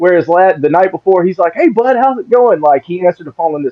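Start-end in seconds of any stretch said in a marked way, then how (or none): 1.5-2.6 bright, joyful, pitched-up cheerful voice. Retelling how a friend answered the night before: imitating a happy, joyful voice. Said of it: "all that happiness and joy that was in his voice".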